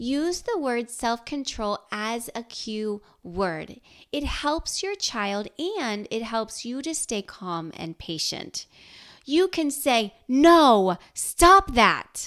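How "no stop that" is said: very loud, angry snap. Showing parents the wrong way to tell a child to stop, in an angry tone. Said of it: "in an angry tone".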